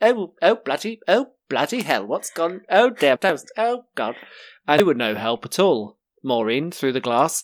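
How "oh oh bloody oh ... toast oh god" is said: fussy, panicky robot voice, higher. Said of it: "like, that bloody gold robot off of Star Wars".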